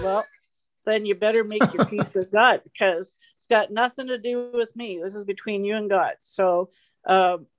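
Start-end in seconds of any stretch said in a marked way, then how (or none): none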